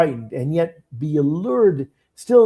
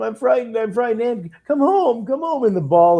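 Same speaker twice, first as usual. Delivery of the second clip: high, mocking, taunting wicked-witch voice; 8 semitones higher than usual. Describing a terrifying movie witch, speaker quotes her taunt in a mocking witch voice. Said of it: "And even the mocking, like when she goes".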